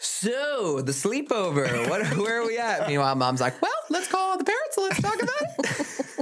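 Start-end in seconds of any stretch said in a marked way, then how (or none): 3.6-6.2 squeaky, very high cartoon mom voice. Retelling family talk about a sleepover, the speaker imitates their mom's voice. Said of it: "That's my mom voice".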